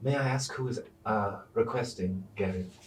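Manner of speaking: soft, hushed, private half-whisper. A woman at the counter leans close to the listener for a private question, half-whispering. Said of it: "She whispers in your ear".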